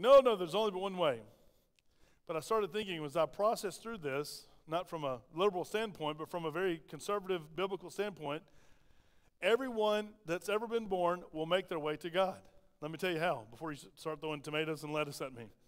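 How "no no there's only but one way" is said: loud, insistent, emphatic delivery. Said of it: "And I was like".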